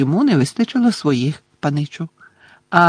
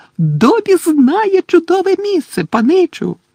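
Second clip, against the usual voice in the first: very high, gleeful, joyful exclamation; 14 semitones higher, 4 dB louder than usual. Dobby the house-elf answers his young master, joyfully exclaiming. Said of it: "радісно вигукнув ельф".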